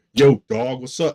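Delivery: loud, overtly manly macho bro voice. Imitating a woman who is overtly trying to be a man: imitating an overtly manly woman. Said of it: "overtly trying to be a man".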